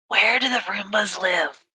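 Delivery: very slow, drawn-out half-whisper. Half-whispering a question in character: half-whispering. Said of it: "Just gonna whisper to it".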